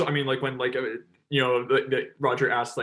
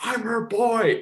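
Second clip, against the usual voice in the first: mock, high, sudden snapped drunken outburst; 9 semitones higher than usual. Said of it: "he just snaps and says".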